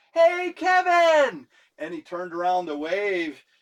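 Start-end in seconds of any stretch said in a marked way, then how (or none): 0.2-1.5 very high, loud, shouted yell. Retelling calling out to someone on the street: retelling a yell. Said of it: "we yelled".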